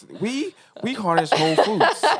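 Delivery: sing-song commercial announcer voice. Imitating the other speaker's reading of a slogan, in a commercial announcer voice. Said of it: "You went into a commercial voice".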